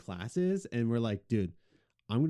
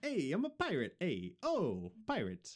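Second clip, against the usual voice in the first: soft, sing-song, put-on Italian accent in pirate style; 6 semitones higher, 6 dB quieter than usual. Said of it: "Italian accents".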